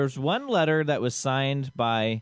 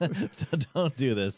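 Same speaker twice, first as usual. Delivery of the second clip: talking through laughter. Asking the other speaker to stop asking questions, laughing while talking. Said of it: "What's so funny?".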